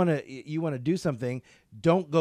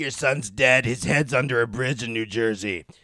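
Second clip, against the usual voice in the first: put-on raspy chain-smoker voice, lower pitch; 3 semitones lower, 4 dB louder than usual. Retelling a psychic's blunt reading on Montel, imitating Sylvia Browne's voice. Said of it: "She had that voice, you know, she was like this".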